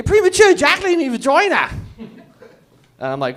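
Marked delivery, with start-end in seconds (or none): 0.0-1.7 very high-pitched put-on English barmaid accent. Acting out a barmaid from england complaining: english barmaid accent. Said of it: "Seventeen hundreds barmaids from England".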